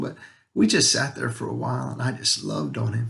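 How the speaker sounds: voice catching, choked up with emotion. A father tells of sitting with his son in pain, choked up. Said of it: "I'm sorry I'm getting a little emotional".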